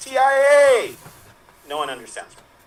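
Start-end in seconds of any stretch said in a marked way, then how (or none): 0.0-1.0 high-pitched, loud calling-out voice. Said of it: "she goes".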